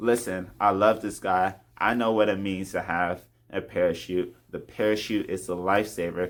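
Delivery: plain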